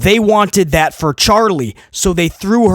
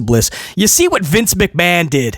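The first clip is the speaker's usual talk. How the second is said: ordinary delivery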